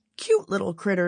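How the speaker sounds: ordinary delivery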